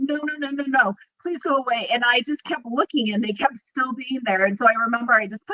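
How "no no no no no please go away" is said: high, panicked, scared pleading voice. Recalling seeing shadow people from bed, reliving freaking out. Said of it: "I'm like freaking out, and I'm like".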